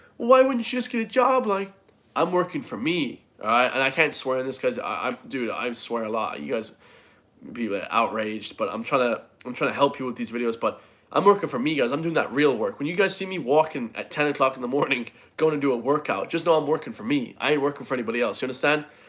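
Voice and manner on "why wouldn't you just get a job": high, mocking, nagging voice. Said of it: "When people say".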